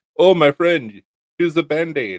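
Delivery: put-on thickest full-strength Russian accent, laid on. After cutting themselves on a knife maker's table, retelling Serge Pinchenko's thick Russian accent. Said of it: "in the thickest Russian accent".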